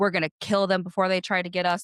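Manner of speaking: play-acted wild, unhinged, frantic burst of crazy energy. Retelling what the devout first wife said: imitating crazy energy. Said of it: "crazy energy".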